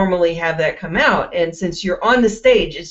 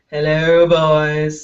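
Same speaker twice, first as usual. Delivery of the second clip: put-on deep, creepy low voice, "boys" drawn out; 3 semitones lower than usual. Recalling greeting people walking by to boost sales, in a creepy low voice. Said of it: "since I have that creepy low voice".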